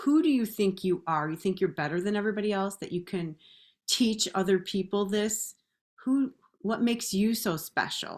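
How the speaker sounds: cutting, harsh, belittling scolding tone. Retelling the inner voice that doubted her: imitating mom's mean inner voice. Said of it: "it was my mom's voice".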